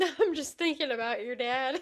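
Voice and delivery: talking through giggles and laughter. Answering another speaker who asks why they are laughing: laughing while talking. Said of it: "And why are you laughing?".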